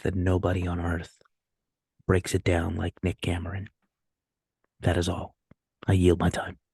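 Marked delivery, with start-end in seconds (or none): 0.1-3.7 mock radio announcer voice. Speaker leans close to the mic for viewers, in an NPR radio voice. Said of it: "in my N P R voice".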